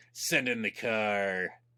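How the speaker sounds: through clenched teeth. Retelling what the lead SWAT guy said, through gritted teeth. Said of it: "through gritted teeth".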